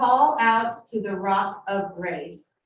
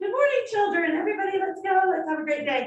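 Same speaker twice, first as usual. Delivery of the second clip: bright, high, all-nice sweet mom voice; 10 semitones higher than usual. Describing a translation as a mom getting kids out the door: imitating a nice mom. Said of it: "You start out all nice".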